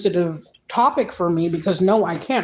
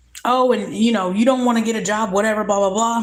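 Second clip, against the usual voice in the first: mock nagging, scolding tirade, yelled; 3 semitones higher than usual. Retelling how she would yell about getting a job: imitating someone yelling. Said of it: "she would start yelling like".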